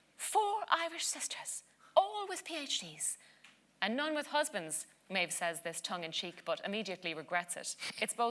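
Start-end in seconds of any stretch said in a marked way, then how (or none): 0.2-4.9 high, slow, mocking British accent. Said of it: "too rude a parody of Miss Charles's intonation".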